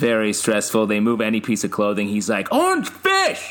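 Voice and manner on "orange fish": shrill, very high yell. Describing shopping with Pete, imitating Pete yelling. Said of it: "That's a good impression".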